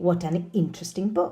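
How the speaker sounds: plain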